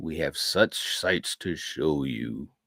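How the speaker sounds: deep, low horror character voice, dropped right down. Talking Hellraiser with the group, quoting the villain in a Pinhead voice. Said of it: "that voice, uh, Doug Bradley".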